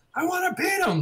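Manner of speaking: mock, very high, kid-like screaming outburst. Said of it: "almost childish the way he just screams".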